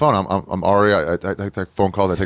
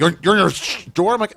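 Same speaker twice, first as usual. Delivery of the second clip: yelling, pitched higher; 10 semitones higher than usual. Retelling how a doorman used to yell at them: imitating Chewy yelling angrily. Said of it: "He used to yell at me sometimes".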